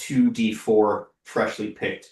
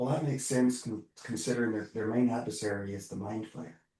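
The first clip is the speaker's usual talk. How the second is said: very soft, quiet murmur under the breath; 9 dB quieter than usual. Voicing a character in a scene, muttering under breath. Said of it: "Narjal says under his breath".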